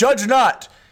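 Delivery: loud, high-pitched, mock self-righteous preachy tone.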